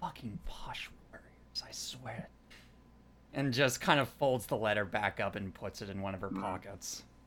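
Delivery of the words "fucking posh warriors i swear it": muttered under the breath, whispered, very quiet. Voicing Gavel, who mutters to herself: muttering to herself. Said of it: "Gavel just mutters to herself".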